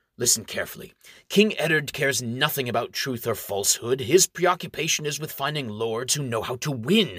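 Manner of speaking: ordinary delivery, nothing marked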